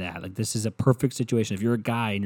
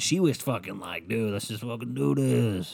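put-on, foul-mouthed sailor voice; 4 dB quieter than usual. Retelling what a woman said to a guy: sailor-sounding voice. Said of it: "she sounds like the fucking sailor".

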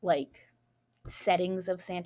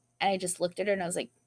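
ordinary talk

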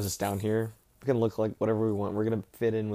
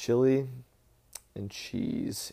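put-on deadpan, dead-level, flat monotone; 2 semitones higher than usual. Retelling a food worker answering a customer's question, in the most monotone voice. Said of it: "the worker just in the most monotone voice".

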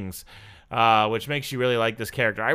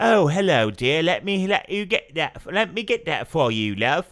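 bad, awful fake put-on British accent; 4 semitones higher than usual. Mocking him as mansplaining to Elsa, in an awful British accent. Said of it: "that was awful British".

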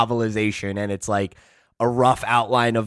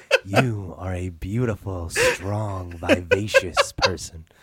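low, swooping, hypnotic self-help tape voice; 4 semitones lower, 4 dB quieter than usual. Imitating a self-help hypnosis audiobook: imitating a hypnotizing audiobook voice. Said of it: "hypnotizing ones".

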